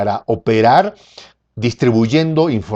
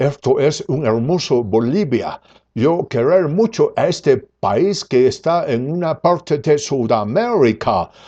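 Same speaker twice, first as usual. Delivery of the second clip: put-on American accent in clumsy, broken Spanish. Imitating a man who spoke about Bolivia like a gringo, put-on gringo accent. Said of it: "hablaba así como gringo".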